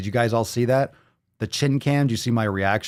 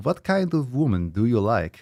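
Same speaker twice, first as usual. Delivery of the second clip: put-on Eastern European, Russian accent. Repeating a question heard on stream: imitating Russian or Eastern European accent. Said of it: "Russian or Eastern European accent".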